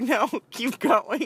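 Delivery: high-pitched moan. Retelling a doctor's exam, retelling a moan. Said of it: "I started moaning, like".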